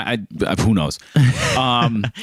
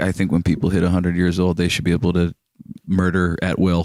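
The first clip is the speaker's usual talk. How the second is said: put-on dry, flat monotone, pitched lower; 4 semitones lower than usual. Retelling what the brother-in-law said at dinner: imitating a flat monotone. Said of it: "he doesn't have peaks and valleys in his voice".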